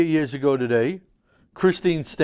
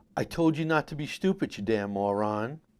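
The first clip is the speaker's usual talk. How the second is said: said straight out, pointed; 8 dB quieter than usual. Warning callers not to be stupid, quoting: imitating Howard Stern's father. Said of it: "I'm gonna quote Howard Stern's father".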